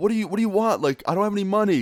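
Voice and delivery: shrill, high-pitched yelling. Retelling running away from a man, imitating yelling while running. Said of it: "I'm yelling behind me".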